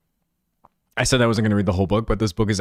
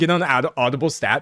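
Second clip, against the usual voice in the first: ordinary delivery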